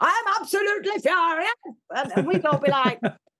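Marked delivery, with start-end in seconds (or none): 0.0-2.1 put-on, lilting Welsh accent, shouted. Recalling a supply teacher, the speaker imitates Mr. Williams shouting in a Welsh lilt. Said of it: "he used to shout in this beautiful Welsh lilt".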